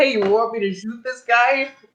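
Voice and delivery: acted high shout. Recounting how a man walked right up to the speaker, retelling a shout. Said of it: "He just walked up right to me and then shouts".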